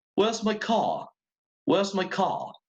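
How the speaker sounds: high, put-on British pronunciation. Teaching Spanish, showing how a British speaker would say it, British accent. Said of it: "And I'm British".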